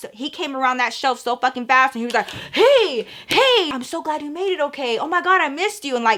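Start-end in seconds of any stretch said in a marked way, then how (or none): 2.3-5.9 high, gushing, overdone eager voice. Retelling a boyfriend greeting after being caught: imitating overexcited boyfriend greeting. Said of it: "really doing the most".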